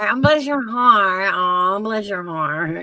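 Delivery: put-on country accent. Retelling how country people talk, imitating a country accent. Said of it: "we be walking around going".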